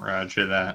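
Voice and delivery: low muttering, mumbled. In the game, a player's character answers a warning, muttering into a drink. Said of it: "muttering into my drink".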